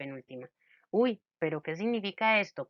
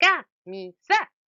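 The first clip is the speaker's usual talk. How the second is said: camisa, double stress on two syllables; 6 semitones higher, 6 dB louder than usual. Imagining a word with two accents: stress on two syllables of camisa. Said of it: "en la palabra camisa tuviera dos acentos".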